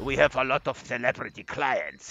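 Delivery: put-on Romanian-accented English, loud. Retelling what the boss said when the speaker started working there, Romanian accent. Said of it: "he said in his Romanian accent".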